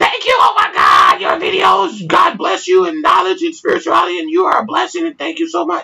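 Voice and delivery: ecstatic, very high-pitched, gushing scream. Retelling a fan's email that was screaming thanks: imitating a screaming excited fan. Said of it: "literally screaming through the goddamn email".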